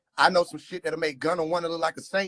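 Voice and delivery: ordinary talk, nothing marked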